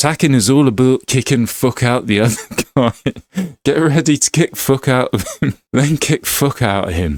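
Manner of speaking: fake Scottish accent throughout. Voicing a game trainer's lines about attacking: put-on Scottish accent. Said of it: "Sorry about the Scottish accent".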